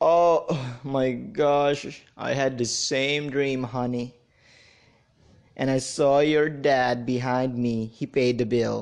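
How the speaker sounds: put-on drowsy, half-asleep, just-woken sleepy voice. Telling a joke, voicing a husband answering his wife, in a put-on sleepy voice. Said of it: "in his sleepy voice".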